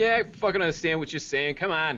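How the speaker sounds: very strong, thick put-on Boston accent. The narrator voices a bird answering a player who asks if it understands: wicked Boston accent. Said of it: "want this bird to have like a wicked Boston accent".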